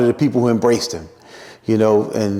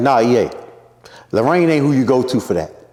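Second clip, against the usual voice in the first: plain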